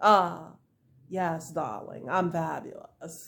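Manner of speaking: put-on haughty voice. Explaining how she answered a compliment, the speaker shows a mock-conceited tone. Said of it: "not like conceited".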